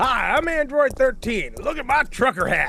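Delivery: put-on high, full hillbilly accent. Retelling what the Z King said to friends, in a hillbilly Z King impression. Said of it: "you've just gone full hillbilly".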